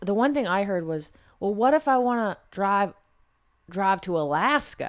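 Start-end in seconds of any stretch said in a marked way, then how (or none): 1.4-4.9 horrible put-on Texas drawl, very slow. Quoting something a person was heard asking: horrible texas accent. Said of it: "I have a horrible Texas accent".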